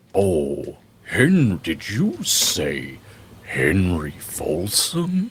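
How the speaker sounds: talking really slow. Voicing a large dragon, asking whether a name was said: talking really slow. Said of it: "You talk really slow".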